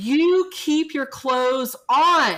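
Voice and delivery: furious, loud, slow yell, each word laid down. Retelling scolding a child found cold without pajamas: imitating her own angry yell. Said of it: "I look at her and I yell".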